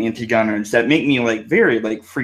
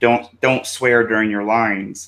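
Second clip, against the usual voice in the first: imitated whispering. Retelling a video where someone coached a speaker: imitating someone whispering. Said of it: "there's this person that whispered, like".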